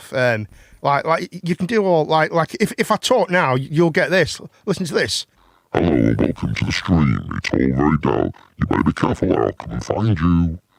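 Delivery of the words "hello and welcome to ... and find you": very deep, low, dark put-on villain voice. Speaker demonstrates a voice effect for listeners: dark voice. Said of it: "the first one, you sounded like that guy from Home Alone... with a dark voice".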